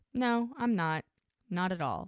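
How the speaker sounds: plain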